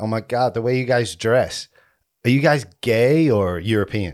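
put-on starstruck American girl voice, chatty. Imitating girls in Vegas asking about their clothes: imitating American girls in Vegas. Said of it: "Girls will come up to us and be like".

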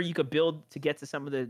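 ordinary talk, nothing marked

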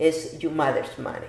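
ordinary talk

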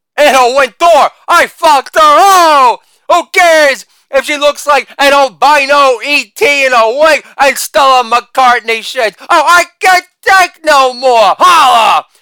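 loud, high comic tough-guy rant, every "oh" stretched. Play to a sold-out Madison Square Garden in the 80s with a loud and proud Andrew Dice Clay impression.

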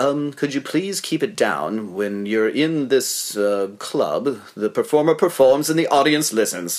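put-on polite British accent. Retelling a performer telling a talking audience member off from stage, imitating Nigel, polite British. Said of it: "in a very British way from the stage".

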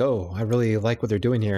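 ordinary delivery

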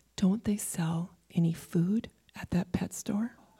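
frail, feeble, very weak, soft voice. Telling a joke, retelling a dying man's last words: imitating a very weak voice. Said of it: "In a very weak voice".

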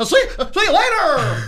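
puppet-like put-on voice. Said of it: "It sounds Muppety to me".

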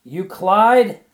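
piercing, very high, very loud shriek. Reading a woman jumping to her feet during a storm, screaming. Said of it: "screamed Ruby Fisher at last".

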